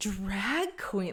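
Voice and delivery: super dramatic, drawn-out, played-big "drag". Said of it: "super dramatic".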